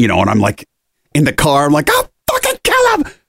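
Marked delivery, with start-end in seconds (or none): 1.9-3.0 put-on, very high, raging, furious shriek. Retelling own reaction in the car, imitating own screaming.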